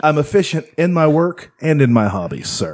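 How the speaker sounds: put-on caveman lawyer voice. Voicing a job applicant addressing the interviewer as sir, in Unfrozen Caveman Lawyer voice. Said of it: "I'm making him sound like unfrozen caveman lawyer".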